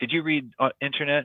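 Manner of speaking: strong, heavy, laid-on-thick put-on Korean accent. Retelling what the headmaster asked: imitating heavy korean accent. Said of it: "heavy Korean accent".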